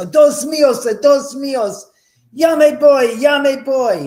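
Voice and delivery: very high shrieking scream in terror. Retelling what a worker said when frightened: imitating someone screaming in terror. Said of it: "he's screaming in terror".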